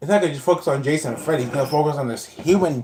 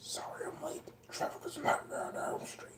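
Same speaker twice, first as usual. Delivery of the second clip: put-on voice, much higher and quieter; 14 semitones higher, 20 dB quieter than usual. Speaker does a second take of the voice he says he can do, doing 'the voice'. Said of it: "That was the voice".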